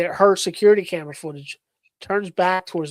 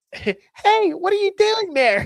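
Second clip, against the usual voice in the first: put-on very high, eerie, creepy small-child voice; 14 semitones higher than usual. Asked to make the voice, the speaker imitates the creepy little kid's voice. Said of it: "It was little kids' voice".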